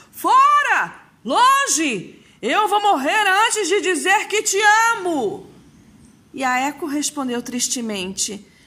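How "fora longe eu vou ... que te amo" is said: very high shout, "Fora" drawn out. Narcissus, running from Echo through the forest, shouts while fleeing. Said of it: "fugiu pela floresta gritando".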